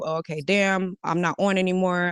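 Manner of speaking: usual speaking voice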